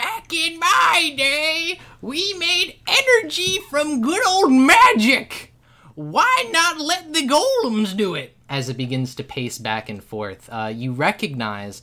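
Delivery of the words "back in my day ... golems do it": very high, shrill voice, slow and drawn out. Narrating a scene where a figure begins to talk and pace: shrill Oakley Boomer voice. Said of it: "its shrill voice ring out".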